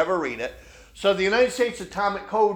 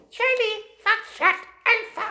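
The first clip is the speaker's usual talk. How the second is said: put-on very high girl's voice, Chinese accent. Retelling a radio story, imitating a girl reading call letters in a high-pitched Chinese accent. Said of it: "this high-pitched Chinese girl's, you know, in a Chinese accent".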